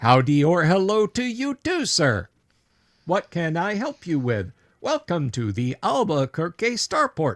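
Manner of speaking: slow, high-pitched mechanical robot voice. Voicing a mechanical man in the wall greeting a visitor: voicing a mechanical man. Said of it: "It turns its photoreceptors to you and says".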